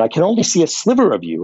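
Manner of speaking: acted near-panicky voice. Retelling a patient's words when the speaker slipped off camera in a session, imitating near panic. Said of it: "in a near panicky voice said".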